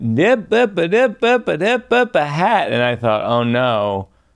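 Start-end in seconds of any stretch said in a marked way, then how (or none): 0.0-2.7 put-on Southern US accent, much higher, slower. Retelling a woman calling out in a parking lot after a show, American Southern accent. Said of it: "American Southern accent".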